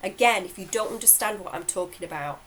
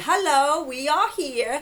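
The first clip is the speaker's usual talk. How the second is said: put-on booming voice, louder; 8 semitones higher, 7 dB louder than usual. Recounting a hypnotherapy session where the Arcturians came through, booming Arcturians voice. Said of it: "this big booming voice comes through".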